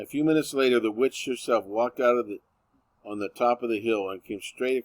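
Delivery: ordinary delivery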